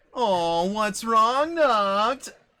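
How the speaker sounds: high, very loud, booming, very slow yell. Retelling what a player yelled in the background of a game: imitating someone yelling. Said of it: "you can hear in the background Cloud yelling".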